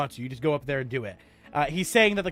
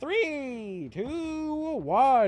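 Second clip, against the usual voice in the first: voice breaking and cracking, pitched up; 8 semitones higher, 3 dB quieter than usual. A narrator counts down for a player trying to catch a dragon; voice cracks on countdown. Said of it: "Ignore that voice crack".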